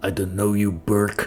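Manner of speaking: curt, hostile, words spat out. Voicing a character replying to a visitor named burke: spitting out a reply. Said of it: "He spits out a reply".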